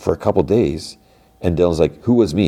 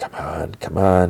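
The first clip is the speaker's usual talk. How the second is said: slow, hopeful half-whisper under the breath; 3 dB quieter than usual. Retelling a scene of someone waiting at an elevator: imitating a half-whisper. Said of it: "he whispers".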